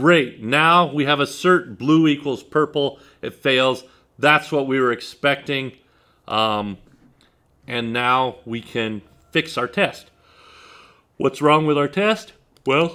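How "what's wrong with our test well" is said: speaking through a yawn, higher pitch. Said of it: "excuse me, I'm yawning".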